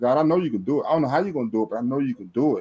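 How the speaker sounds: tearful, crying, pleading voice. Retelling a desperate prayer to God: retelling own tearful prayer. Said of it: "And I'm just crying".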